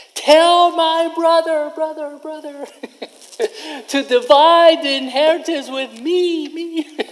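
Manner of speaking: mock, very high, straining yell. A speaker retells a story about Jesus, imitating a man yelling out in the open. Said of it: "And he's yelling".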